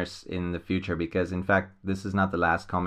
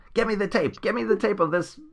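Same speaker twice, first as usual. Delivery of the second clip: mock scream, very high-pitched; 13 semitones higher than usual. Describing an intense villain, retelling how he screams at his butler: imitating someone screaming. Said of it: "he screams at his butler".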